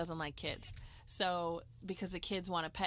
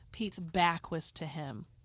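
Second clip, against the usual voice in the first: plain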